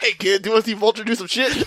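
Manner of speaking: high cartoon vampire voice. Riffing on giving a character Dracula's voice from Billy and Mandy: Billy and Mandy Dracula voice. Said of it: "give him the voice of the guy who did Dracula".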